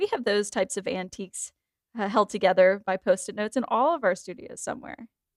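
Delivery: ordinary talk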